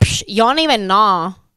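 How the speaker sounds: loud, scoffing "psh" with attitude. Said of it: "Does she talk like this?".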